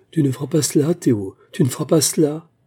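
frantic, desperate, wild cry, beside herself. Reading a story, Véronica cries out to Théo as he threatens to shoot: crying out frantically. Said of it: "cria éperdument Véronica".

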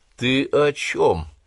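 high, scornful, smirking, contemptuous sneering tone. Watanabe, asked about a priest's research, answers with a contemptuous smirk. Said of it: "презрительно усмехнулся Ватанабе".

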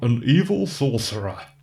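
rough, gruff movie voice-over narrator voice. Trying an imaginary voice-over for a revenge flick, gruff voice-over voice. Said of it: "I'll try it now in a gruff voice".

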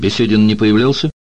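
irritated, bilious, sour, peevish. Entering an office without a greeting, a man asks his question, irritated and bilious. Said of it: "заранее кривя физиономию в раздраженной желчной гримасе".

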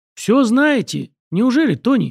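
sarcastic mocking tone. Lin cuts off Tony, a voice from the darkness, with a mocking interruption. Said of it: "насмешливо прервала его Лин".

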